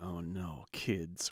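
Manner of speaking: put-on low, soft voice with Hungarian accent.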